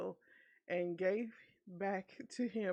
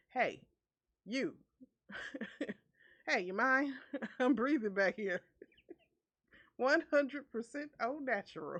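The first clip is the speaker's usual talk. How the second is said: cliché put-on Boston accent; 4 semitones higher, 4 dB louder than usual. Retelling a story, the speaker voices their past self in a stereotypical Boston accent. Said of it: "Me in a stereotypical Boston a- accent".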